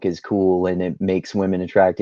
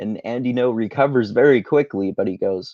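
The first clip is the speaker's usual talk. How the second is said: ordinary talk, nothing marked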